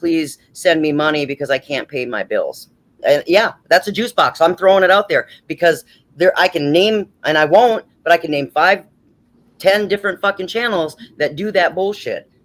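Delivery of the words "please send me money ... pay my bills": mock crying voice. Mocking other channels begging for money: imitating someone crying. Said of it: "crying and going".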